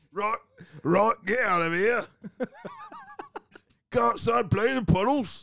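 very high, hammy, swooping, sing-song comedy voice. Parodying a BBC drama scene about pies and rain: Monty Python character voice. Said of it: "they all sound like Monty Python characters".

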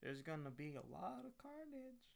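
put-on soft southern movie-style male accent. Correcting how someone quoted a movie line, in a southern guy voice. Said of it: "kind of like a southern guy".

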